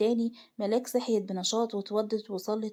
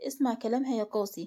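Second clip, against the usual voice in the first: plain reading voice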